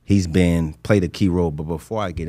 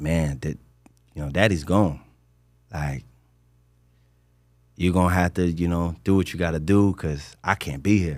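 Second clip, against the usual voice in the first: acted tearful, crying speech. Holding his child, the speaker retells what he said to him: retelling tearful words. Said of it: "And I'm crying".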